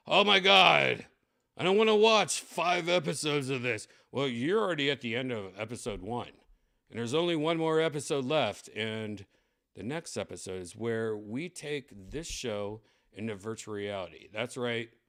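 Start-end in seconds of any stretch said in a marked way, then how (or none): 0.1-3.8 groaning exasperation. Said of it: "and it's like".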